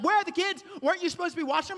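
play-acted frantic panic, high and rushed. Retelling how his wife reacted to water everywhere, imitating wife freaking out. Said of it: "My wife is freaking out".

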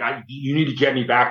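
put-on angry outburst, like a tantrum. Retelling demanding a helicopter ride back: retelling a temper tantrum. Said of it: "I throw another temper tantrum".

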